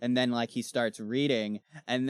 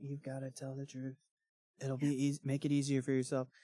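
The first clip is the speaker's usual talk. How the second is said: hushed, fast, creepy half-whisper under the breath; 7 dB quieter than usual. Retelling a scene from the book, quoting a character who half-whispers throughout: half-whispering. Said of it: "he's just whispering the whole time".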